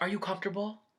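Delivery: hushed, courteous TV reporter voice. Retelling what the speaker asked during a past encounter: polite reporter voice. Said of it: "My motherfucking reporter ass fucking voice".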